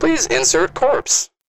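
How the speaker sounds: very high-pitched mechanical robot announcer voice. Describing what the machine says once it opens: robot voice. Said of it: "the same robot voice that was like on the elevator".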